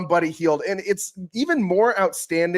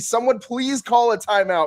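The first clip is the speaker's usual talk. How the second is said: mock shouting, yelling; 4 semitones higher than usual. Retelling watching the game from the couch: retelling own yell at the TV. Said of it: "yelling at the T V".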